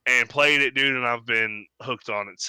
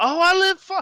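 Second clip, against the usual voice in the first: high, eager mock gamer dude voice.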